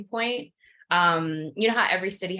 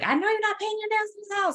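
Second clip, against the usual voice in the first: acted, shrill, very high, rapid scolding yell. Recalling her mom yelling from upstairs while she painted her nails: imitating mom yelling. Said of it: "she's yelling".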